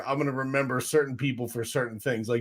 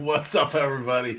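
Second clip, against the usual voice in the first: speech broken by laughter. Greeting everybody at the start of a live stream, laughing while talking. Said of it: "I'm laughing".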